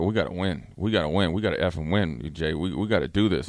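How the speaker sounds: put-on choked-up pleading. Retelling a talk in an elevator before practice: imitating someone choked up. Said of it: "all, like, choked up".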